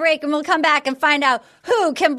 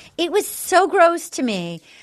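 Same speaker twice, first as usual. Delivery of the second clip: ordinary talk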